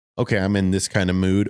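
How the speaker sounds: usual speaking voice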